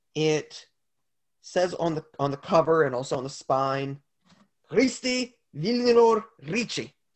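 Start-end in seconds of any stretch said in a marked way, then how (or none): 4.7-6.9 high-pitched put-on German accent, best effort. Player reads the name on a book's cover and spine, best German accent. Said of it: "It's my best German accent".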